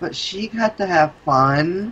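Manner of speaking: high, whining, complaining tone. Playing Amara and answering another player, in a whiny tone. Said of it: "in a whiny tone".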